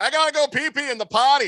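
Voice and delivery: mock, shrill, very high, all-out bellow. Father retelling what he shouted into a McDonald's bathroom, retelling a loud bellow. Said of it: "bellowing into the McDonald's bathroom".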